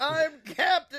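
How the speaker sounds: crazed, shrill, very high yell. Acting out Captain Tibbs going crazy in the chat: Alex Jones voice yelling. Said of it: "just yelling".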